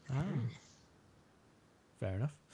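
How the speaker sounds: very quiet, hushed, taken-aback murmur. Hearing someone pick the Indianapolis 500 as a bucket-list race, surprised. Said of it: "you sound surprised".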